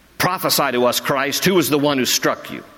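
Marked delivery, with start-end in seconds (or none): none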